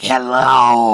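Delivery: put-on voice of a forty-year-old heavy smoker. Retelling a phone call with an online girlfriend: imitating a forty-year-old heavy smoker. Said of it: "she sounded like she was forty, but she, like, probably smoked eighty packs a day".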